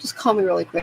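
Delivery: ordinary delivery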